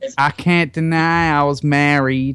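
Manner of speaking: put-on American accent. Reading out a quoted statement, the English host does it in an American accent. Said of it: "I'm doing it American".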